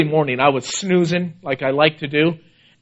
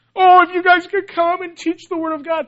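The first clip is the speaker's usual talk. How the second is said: mock tearful begging plea, very high pitched; 13 semitones higher than usual. Retelling how a crying man begged them to come teach; imitating someone begging. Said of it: "Just begging us".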